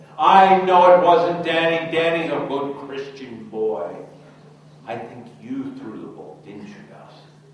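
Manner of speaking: high-pitched, loud, stern teacher voice.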